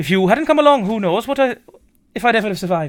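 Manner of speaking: put-on Welsh accent drifting Irish. Performer reading a character's lines, trying a Welsh accent that keeps slipping into Irish. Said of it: "It goes to Irish so quickly".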